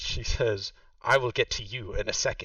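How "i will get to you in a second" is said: short, clipped, curt and terse. Voicing a character who brushes off a player: terse voice. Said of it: "this terse voice".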